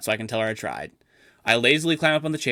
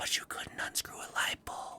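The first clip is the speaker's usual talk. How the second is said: menacing, threatening, hushed whisper. Acting out a small inner voice during an imagined Nobel Prize acceptance: menacing whisper. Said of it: "a small voice whispers menacingly".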